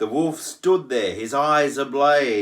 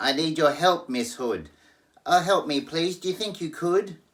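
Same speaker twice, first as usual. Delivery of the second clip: high, scared, desperate pleading squeal; 5 semitones higher than usual. Narrator reading a story where Pig phones for help, Pig crying out. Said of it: "The little pig began to squeal. / The little pig began to squeal. He cried, "Oh, wolf, you've had one meal. Why can't we talk and make a deal?" / He cried".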